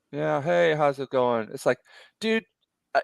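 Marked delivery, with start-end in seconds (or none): 0.2-1.5 mock bored, unenthusiastic voice. Imitating a comic store owner greeting a customer: imitating an unenthusiastic owner. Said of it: "he's so, like, unenthusiastic".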